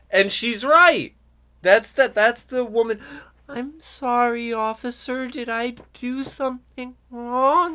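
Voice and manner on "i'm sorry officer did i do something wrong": fake, contrived innocent voice, much higher. Imitating how a woman talks to a police officer, fake, contrived voice. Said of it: "such a fake, contrived voice".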